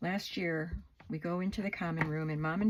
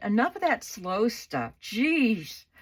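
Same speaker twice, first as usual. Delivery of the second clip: put-on snooty, rude, loud, snotty griping; 4 semitones higher, 7 dB louder than usual. Retelling what one of the ladies said while they played, mocking a loud snotty voice. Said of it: "in a loud and snotty voice".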